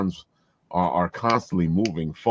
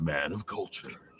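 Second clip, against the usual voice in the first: grand, epic, heroic man voice; 2 semitones lower, 10 dB quieter than usual. Copying another speaker's line: imitating an epic man voice. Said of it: "you even get the, the epic man voice".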